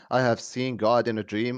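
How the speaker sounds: ordinary talk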